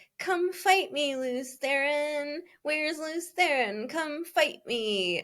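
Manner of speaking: put-on petulant whine at a very high pitch. Describing a character from the novels, imitate his whiny petulant taunt. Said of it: "most petulant, whiny".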